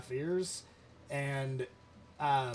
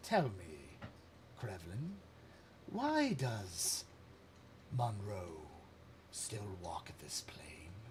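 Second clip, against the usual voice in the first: quiet, hushed, soft murmuring voice; 7 semitones lower, 9 dB quieter than usual. The familiar voice of Ugathar addresses Krevlin, its would-be champion: Ugathar's voice. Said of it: "you hear the familiar voice of Ugathar say".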